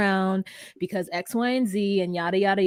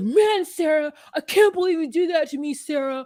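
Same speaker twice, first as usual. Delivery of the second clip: aggrieved, hurt, upset, pitched-up outburst; 7 semitones higher, 4 dB louder than usual. Retelling a reality show scene, imitating someone upset. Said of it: "he gets so upset".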